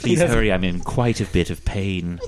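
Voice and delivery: put-on creepy killer voice. Voicing a patient approached by a healer: Hannibal Lecter voice. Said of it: "It's Hannibal Lecter".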